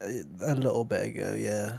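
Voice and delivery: deep groggy just-woke-up voice. Asked whether they just woke up, the speaker answers in a deep just-woke-up voice. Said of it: "deepness of your voice".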